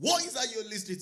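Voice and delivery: put-on high loud Nigerian-accented English. A father retells questioning his daughter about her music, Nigerian accent. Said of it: "In my Nigerian accent".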